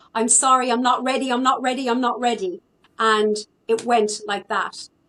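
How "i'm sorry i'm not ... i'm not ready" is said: screaming with the same words repeated. Retelling own words on seeing a figure in the room: retelling own screaming. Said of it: "just started screaming".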